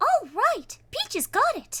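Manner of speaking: super high princess voice, very high, swooping. Describing Peach's Mario Kart line after she runs you over, Peach voice. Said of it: "Peach is just like a super high voice".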